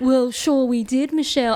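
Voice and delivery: news-presenter read, anchor-style newscaster voice. Kicking off this week's movie discussion, speaking in a newscaster voice. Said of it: "If you speak in the newscaster voice once again".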